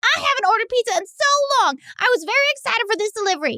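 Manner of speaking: very high-pitched voice. Reading a one-star review aloud as its writer: Larisse impression. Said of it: "I'm gonna try to do my best Larisse impression".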